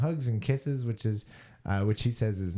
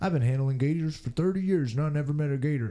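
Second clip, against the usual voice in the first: put-on Florida accent, pitched up; 5 semitones higher than usual. Voice the man who has handled gators for thirty years, in a put-on Florida accent. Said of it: "I don't know why I'm doing the accent".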